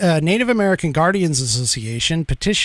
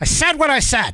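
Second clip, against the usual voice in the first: higher-pitched put-on voice, delivered defiantly; 9 semitones higher than usual. Quoting a saying to close a stated position: Mark Levin impression. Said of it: "hopefully that impression actually is, is good enough".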